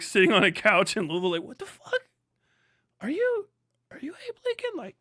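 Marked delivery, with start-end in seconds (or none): 1.4-4.8 play-acted, totally wasted, stoned and out of it. Acting out someone wrecked on a couch meeting a stranger: imitating someone very high. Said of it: "wrecked out of your mind".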